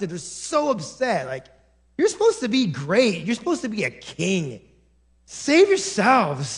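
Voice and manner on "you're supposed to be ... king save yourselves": put-on voice full of disdain. Acting out the mockers at the cross: imitating voice full of disdain. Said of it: "you can almost hear the disdain in their voices".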